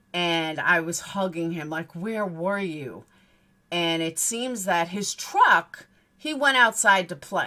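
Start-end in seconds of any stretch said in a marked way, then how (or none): 2.0-3.1 put-on hysterical crying, sobbing. Retelling hugging the boy after he came running back, retelling hysterical crying. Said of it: "I'm hysterical crying".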